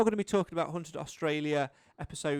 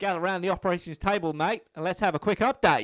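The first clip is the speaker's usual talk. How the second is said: fake Australian accent, laid on thick; 2 semitones higher than usual. Speaker opening a quick update on the episode, in a put-on Australian accent. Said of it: "I'm so sorry for this Australian accent".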